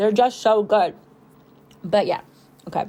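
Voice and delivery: talking while chewing, mouth full. Recording a long voiceover while eating berries, talking while chewing. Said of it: "I'll stop chewing".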